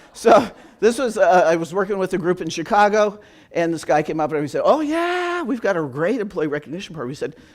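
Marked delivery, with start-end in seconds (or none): 4.6-7.1 openly sarcastic, mock delivery imitating sarcasm. Retelling an employee's remark about their recognition program: imitating sarcasm. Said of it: "Second one is sarcasm".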